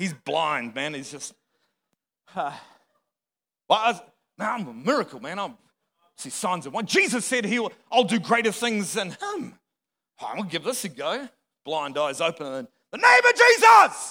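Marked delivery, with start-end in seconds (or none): 12.9-14.1 full-force, loud, swooping, rising shout. Recounting trying to heal a blind man, retelling own shout. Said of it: "I'm shouting".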